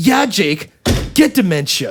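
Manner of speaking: sudden loud blurt. Retelling a student's remark to a tutor in front of others: imitating a loud blurt. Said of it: "loudly in front of, like, six other people".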